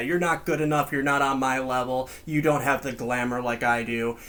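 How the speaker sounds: plain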